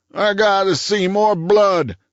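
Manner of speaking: croaked, pitched way up. Staggering forward as Dobbs pushes him back, Cooney insists: Cooney's croaking voice. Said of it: "he croaked".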